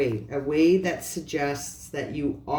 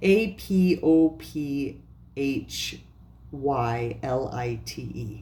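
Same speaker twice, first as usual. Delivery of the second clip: "apophyllite" spelled out slowly, letter by letter. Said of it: "It's written in the description below".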